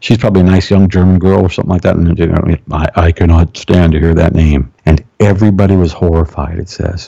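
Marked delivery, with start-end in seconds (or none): 2.7-4.7 deep spirit voice, lower. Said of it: "in that tone with my deep one".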